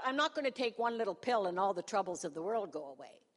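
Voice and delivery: ordinary talk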